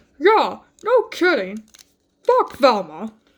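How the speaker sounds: cartoon dog voice with swooping, swinging pitch. Answering a question to a toy figure in a Scooby-Doo voice. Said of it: "that's my best Scooby-Doo impression".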